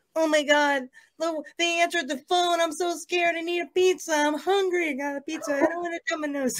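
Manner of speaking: very high, soft, hushed cartoon voice. Doing a bit about a pizza phone call, Morty impression. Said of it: "his Morty impression now".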